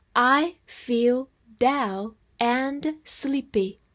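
slow, measured, careful reading voice. Reading an example sentence aloud for language learners: slow reading. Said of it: "我们慢读一遍".

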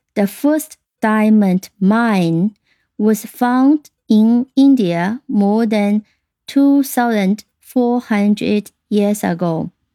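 slow, careful, deliberate reading.

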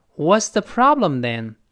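slow delivery with pitch falling at the end.

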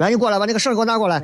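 speech in Henan dialect. Recalling childhood monkey trainers, imitating one speaking in Henan dialect. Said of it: "操着一口很很很很洋气的一口河南话".

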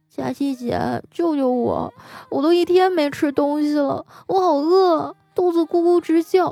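put-on weak, listless voice. Retelling how he pleaded just before the end of the workday, imitating a feeble, weak voice. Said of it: "有气无力的说".

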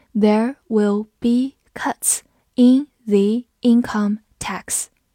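slow, careful read-through.

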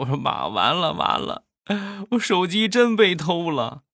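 put-on, high-pitched, tearful voice on the edge of tears. Recounting the call to mom after the phone went missing, retelling in a crying voice. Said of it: "我当时带着哭腔".

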